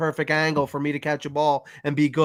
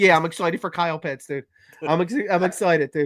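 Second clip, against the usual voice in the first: ordinary talk, nothing marked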